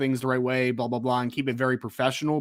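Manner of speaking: usual speaking voice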